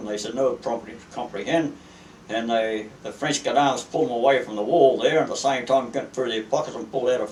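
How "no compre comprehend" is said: plain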